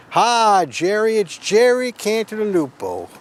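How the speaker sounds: very slow, swooping Texas drawl. Imitating a sponsor who has a Texas accent: Texas accent imitating Jerry Cantalupo. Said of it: "He has a Texas accent".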